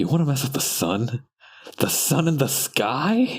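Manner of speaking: soft, hushed half-whisper under the breath. Acting out a courtroom scene as the lawyer: half-whisper. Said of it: "In a whisper".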